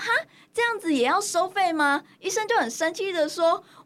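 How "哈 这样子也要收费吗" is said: startled, disbelieving, surprised, pitched-up tone. Retelling own reaction to being charged by the doctor: imitating own surprised reply. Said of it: "很惊讶的跟医生说".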